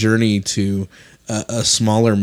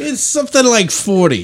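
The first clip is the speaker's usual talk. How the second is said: accent with Yiddish inflection; 12 semitones higher, 4 dB louder than usual.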